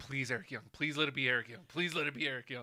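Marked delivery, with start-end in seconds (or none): none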